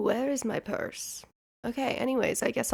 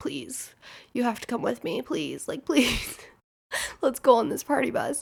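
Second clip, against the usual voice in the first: put-on breathless, hyperventilating pleading voice. Retelling begging a friend to come along, imitating own breathless pleading.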